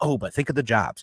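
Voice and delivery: ordinary delivery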